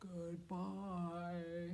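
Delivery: very low, soft voice, as low as possible.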